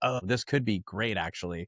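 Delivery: ordinary delivery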